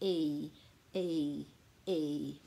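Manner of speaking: slow, low, each E sound separated. Explaining how the sounds change, showing them said slowly. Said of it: "if you say it slowly".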